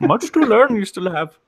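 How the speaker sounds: very high, squeaky little character voice. Joining in after others compare Yoda voices: Yoda voice. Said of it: "Was that supposed to be Yoda?".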